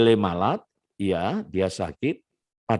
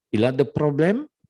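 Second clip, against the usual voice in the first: pitch lifts at the end on problem; 5 semitones higher than usual. Teaching french question intonation, question rise on problem. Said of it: "intonasinya dibuat intonasi kalimat tanya".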